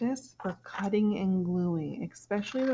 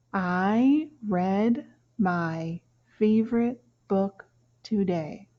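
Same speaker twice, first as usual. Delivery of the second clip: slow, loud, deliberate word-by-word reading; 5 dB louder than usual. Reading a sentence aloud for listeners to read along with, reading slowly. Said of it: "I'm going to go slow".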